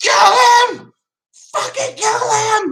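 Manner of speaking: very high, intense, drawn-out yelled scream. Retelling yelling at the team's players during a kick return, retelling a scream. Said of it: "And I scream".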